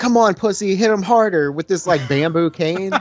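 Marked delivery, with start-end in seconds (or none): 0.0-1.5 taunting, needling, goading, jeering tone. Retelling a movie scene where she urges him on: imitating someone egging him on. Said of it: "egging him on".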